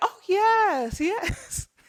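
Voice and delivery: own voice pushed very high, an octave up. Retelling own code-switching talk, imitating own voice an octave higher. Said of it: "I talk in an octave higher".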